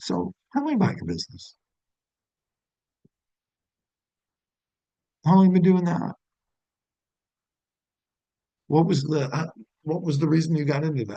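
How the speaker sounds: genuinely curious, interested tone. Showing how to ask a customer about their business: genuinely curious tone. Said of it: ""I really wanna know," tonality".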